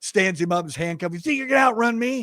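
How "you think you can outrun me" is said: put-on, hollered, high-pitched yell. Retelling a tackle where the officer yelled at the suspect: imitating a yell. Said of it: "Daryl starts yelling at him".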